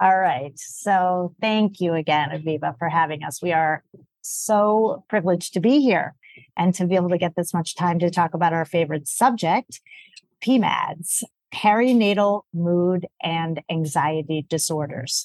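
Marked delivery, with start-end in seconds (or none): 11.5-15.3 slow, deliberate spelling-out, each word set down with care. Guest thanking the host and spelling out an acronym, slow and deliberate. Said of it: "I say it slowly and deliberately".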